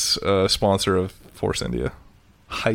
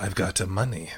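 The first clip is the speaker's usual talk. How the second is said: clumsy, unconvincing put-on Russian accent; 8 dB quieter than usual. Voicing a racing driver who boasts of money: bad Russian accent impression. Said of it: "That's my Russia impression".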